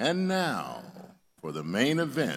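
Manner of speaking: radio announcer voice. Joking before reintroducing a speaker: radio announcer voice. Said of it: "Now I'm gonna use my radio announcer voice".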